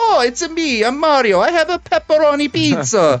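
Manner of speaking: very high, slow stock Italian. Retelling a voice actor's Mario audition line: stereotypical Italian Mario voice. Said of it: "stereotypical Italian phrases".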